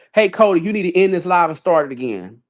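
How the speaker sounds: normal talking voice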